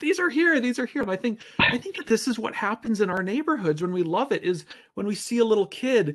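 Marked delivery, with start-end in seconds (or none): 0.0-1.0 put-on high-pitched, shrieking, childlike scream. Retelling how someone reacted to flowers coming up: imitating someone screaming. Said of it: "she was just screaming".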